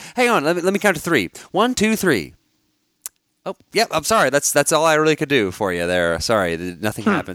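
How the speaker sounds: snarky, sarcastic delivery. Retelling a reply to kids who want more: imitating own snarky remark. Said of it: "those snarky comments".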